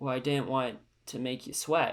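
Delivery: bone-dry, flat, emotionless deadpan delivery. Retelling how a character answers her in their final conversation, retelling a deadpan line. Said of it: "Just like so deadpan".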